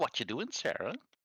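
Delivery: high-pitched goofy voice. Voicing the character Joe as he speaks to Sarah, goofy Joe voice. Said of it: "let's give him a goofy voice".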